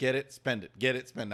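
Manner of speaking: normal talking voice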